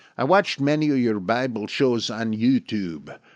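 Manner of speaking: put-on poor Dutch accent. Reading out a listener's letter from the Netherlands, in a terrible Dutch accent. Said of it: "this is terrible, this accent".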